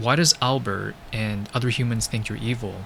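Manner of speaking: ordinary talk, nothing marked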